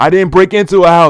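full-volume, very loud, high-pitched shouted outburst. Recounting the police accusing their son, the speaker retells answering: retelling saying it loudly. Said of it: "I said it loud as fuck".

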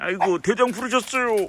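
playful, high, fast, fawning eager puppy voice.

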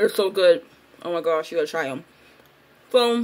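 speaking while snacking. Mid-conversation, the speaker apologizes for eating chocolate-covered blueberries, talking while eating. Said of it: "sorry i'm eating".

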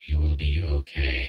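very low, loud, guttural, unnatural monster growl. Narrating a story, a monster's voice speaks inside a character's head: unnatural guttural growl. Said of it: "it says in an unnatural, guttural growl".

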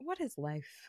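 soft, stunned, quiet voice. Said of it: "And I'm sitting there being like".

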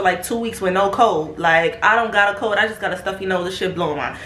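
ordinary talk, nothing marked

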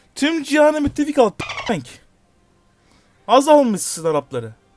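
fed-up heated outburst. Streaming a game and reacting to how it's going: angry. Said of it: "Sinirlendim yine ya".

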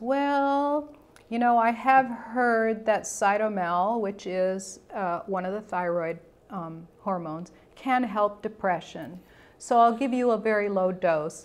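ordinary talk, nothing marked

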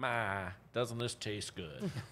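acted-out, fake Southern accent. Acting out what to say when served bad food: put-on Southern accent. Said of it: "Why did you get an accent?".

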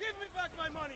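screaming. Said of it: "Why does he scream?".

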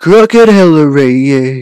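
put-on voice with heavy, overdone inflection. Practicing a voice they call bad: put-on voice, too much inflection. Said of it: "Nope, that's too much inflection".

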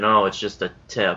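ordinary delivery

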